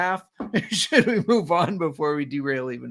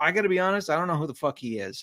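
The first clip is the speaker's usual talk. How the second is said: plain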